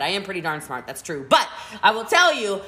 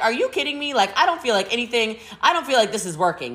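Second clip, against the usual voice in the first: ordinary talk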